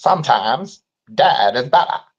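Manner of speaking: very slow put-on movie character voice, words dragged out. Asked to repeat the impression, quoting a Pet Sematary line. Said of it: "That's my impression".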